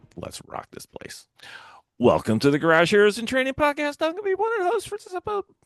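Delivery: very high, swooping, rising excitement. Podcast host opening the episode as one of its hosts, in a very high-pitched excited voice. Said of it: "Can my voice get any higher?".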